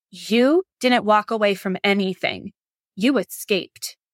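mock-stern, put-on severe voice. Retelling what someone on their livestream told the speaker, imitating someone saying it sternly. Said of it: "very sternly said".

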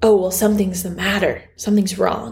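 fast, rattled-off, jarring, frightened voice. Describing the inner voice heard when really scared, then demonstrating it: quick, jarring scared voice. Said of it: "And it sounds like that".

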